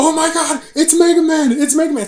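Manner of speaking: frenzied arena announcer, very high, shrill, very loud. Retelling a live game tournament's announcer: imitating an excited announcer. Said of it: "the announcer's like".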